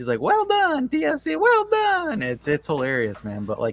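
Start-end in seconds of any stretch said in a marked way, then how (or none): 0.2-2.2 put-on piping, very high voice, heavy Italian accent. Quoting a TFC player at halftime, high-pitched thick Italian accent. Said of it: "his voice is super high pitched".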